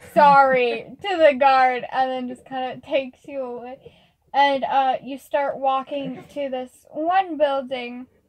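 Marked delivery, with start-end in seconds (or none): 0.2-0.9 loud, emotionless sorry. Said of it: "like, no emotion in the voice".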